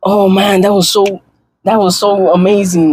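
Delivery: mock excited gushing. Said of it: "I can't jump for joy. I can't be like".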